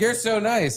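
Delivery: put-on angry woman voice. Retelling what an upset woman kept saying: imitating an angry woman. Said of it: "she was really mad".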